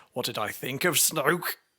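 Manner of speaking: ordinary talk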